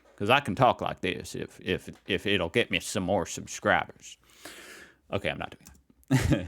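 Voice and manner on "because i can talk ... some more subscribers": put-on Southern cowboy accent. Asking viewers whether their accent is nice, putting on a southern cowboy accent. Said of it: "talking about the cowboys down here".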